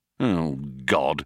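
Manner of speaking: mumbled under breath. Ford reacts as the ship's computer refuses to open the hatch; muttered. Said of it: "muttered Ford".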